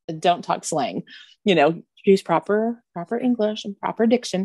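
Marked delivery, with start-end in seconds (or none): none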